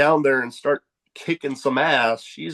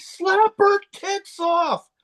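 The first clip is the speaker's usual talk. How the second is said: very high, drawn-out holler. Retelling shouting something over a crowd at a show: retelling a yell. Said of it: "I just yelled out over everybody".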